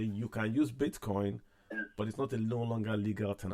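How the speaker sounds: ordinary talk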